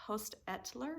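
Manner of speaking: name spoken softly with a rising tune.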